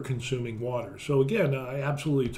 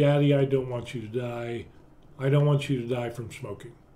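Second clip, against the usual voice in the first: put-on tearful, teary pleading voice. Retelling his daughter's words as she hugged him: imitating a tearful daughter. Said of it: "she had a little tear in her eye".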